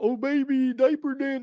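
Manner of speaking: terrible, very high, drawn-out voice. Trying an impression of an announcer again: terrible Dick Vitale impression. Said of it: "that's a terrible impression".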